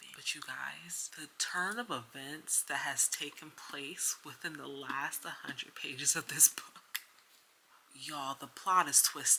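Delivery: hushed whisper. At their sister's house while she sleeps, telling viewers about a book, whispering. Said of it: "I'm whispering because I'm at my sister's house".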